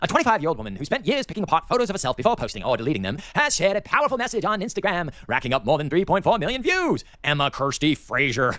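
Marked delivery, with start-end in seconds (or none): 0.0-7.0 mocking, fast, put-on English accent. Reading a news story aloud in a put-on English accent. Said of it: "I gotta read this in an English accent".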